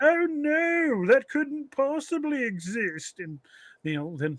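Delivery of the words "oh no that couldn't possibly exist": put-on British accent, very high, very slow drawl. Picturing himself hunting the Billy ape, the speaker acts it out: British accent. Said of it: "do my British accent".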